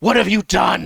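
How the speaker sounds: very loud, high, in-character wizard's yell. Voicing a fleeing wizard as chaos breaks out: yelling in character. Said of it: "he just yells".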